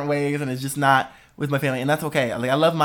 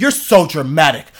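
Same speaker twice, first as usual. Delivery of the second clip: loud yelling; 6 dB louder than usual. Retelling what an older brother used to say: imitating a brother yelling. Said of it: "You are yelling at me right now".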